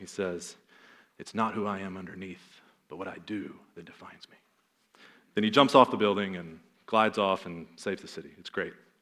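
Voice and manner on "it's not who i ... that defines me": most dramatic, hushed, soft caped superhero voice. Retelling a movie scene where the hero answers his lady friend; dramatic Batman impression. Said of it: "in his most dramatic Batman voice".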